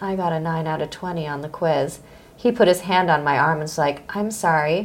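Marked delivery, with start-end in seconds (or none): 0.0-2.0 put-on sad voice, quieter and slower. Retelling what you said to him while sitting next to him, in a put-on sad voice. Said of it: "I said in a sad voice".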